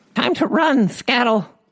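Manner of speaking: very high, squeaky little goblin voice. Narrator reading a goblin's line as it runs off, squeaky goblin voice. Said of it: "Squeaked the goblin".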